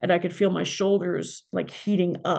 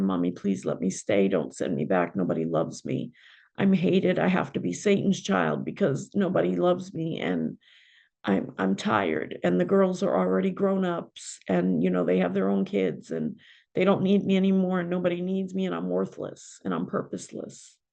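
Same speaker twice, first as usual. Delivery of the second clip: pleading, begging tone with swooping pitch. Retelling what she said to her mother: retelling her own begging. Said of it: "I'm begging and I'm pleading with her".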